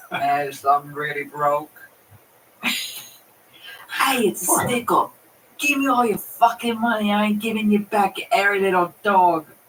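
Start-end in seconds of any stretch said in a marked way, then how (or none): 2.6-9.4 put-on tipsy, drunk-sounding voice. Acting out a broke, drunk robber doing a stick-up, drunk robber voice. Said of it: "it's more like I'm from that mood".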